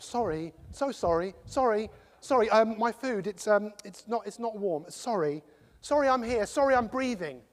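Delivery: hesitant, endlessly apologetic rambling in English accent. Acting out how English people apologize for everything: imitating an overly apologetic English person. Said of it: "That's another thing us English people like to do".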